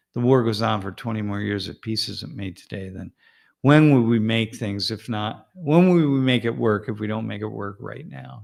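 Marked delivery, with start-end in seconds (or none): none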